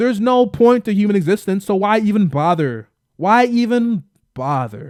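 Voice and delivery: dripping, long-winded heavy sarcasm, repeated. Mocking people who never engage with anything genuinely: sarcastic. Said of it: "that long session of sarcasm I was going at".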